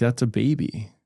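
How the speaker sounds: plain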